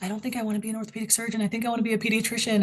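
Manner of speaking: whispering. Retelling a phone call with a friend on a dark snowy campus, whispering. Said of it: "I was like whispering".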